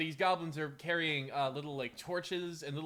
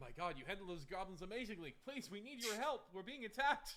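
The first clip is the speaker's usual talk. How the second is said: high, pleading, begging sheriff voice; 5 semitones higher, 9 dB quieter than usual. Voicing the town sheriff running up to the party: town sheriff pleading for help. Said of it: "the town sheriff runs up to you".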